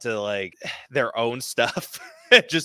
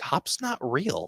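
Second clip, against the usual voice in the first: put-on soft, hushed half-whisper like a small child; 3 semitones higher, 6 dB quieter than usual. Retelling a kid's reply at bedtime, imitating a child half-whispering. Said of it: "comes up and whispers".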